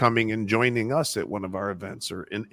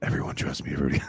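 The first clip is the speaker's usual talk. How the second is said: playful, joking, confidential lean-in whisper; 8 semitones lower than usual. Joking about leaning in to the customer: joking whisper to a customer. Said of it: "I just lean in and whisper to the customer".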